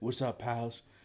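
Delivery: cool, swaggy delivery with heavy swagger. Retelling Michael B. Jordan coming in as a guest, swaggy Michael B. Jordan impression. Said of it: "how he's all swaggy".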